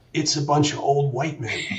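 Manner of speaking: imitated whisper, under the breath. Retelling a remark made to Tom at a first meeting: retelling a whisper under the breath. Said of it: "kind of whispering to Tom under my breath".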